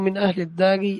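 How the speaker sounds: ordinary delivery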